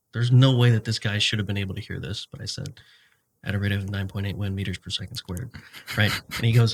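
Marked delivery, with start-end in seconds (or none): 3.4-5.4 soft, mumbled stage whisper under the breath. Retelling a remark made during an instructor's training talk: retelling a half-whisper. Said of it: "and I whispered this".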